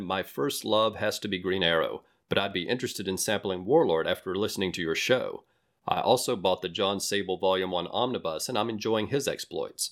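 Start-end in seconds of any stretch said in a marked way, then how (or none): none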